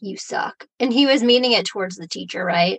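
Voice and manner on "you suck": muttering under breath, quieter. Retelling what Tommy said to the teacher: imitating muttering under breath. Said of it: "Tommy says under his breath".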